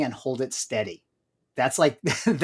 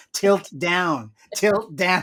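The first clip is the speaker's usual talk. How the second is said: mock-screaming, yelling; 3 semitones higher than usual. Describing a missing shot on a tv show, retelling screaming at the tv. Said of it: "I'll literally be screaming at the T V".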